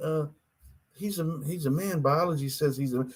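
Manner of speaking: soft, polite, gently objecting tone.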